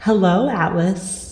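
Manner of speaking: hushed whispering. In a role-play scene, greeting another character, whispering. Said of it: "I'm just gonna whisper".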